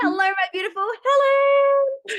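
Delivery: thrilled, excited, very high-pitched voice. Host greets a guest just introduced on the show, really high-pitched excited voice. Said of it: "My my voice gets really high pitched".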